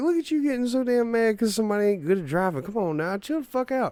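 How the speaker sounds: put-on teasing, pitched very high. Retelling teasing mom about getting mad at drivers: imitating own past teasing. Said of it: "I'd just be making fun of her for it".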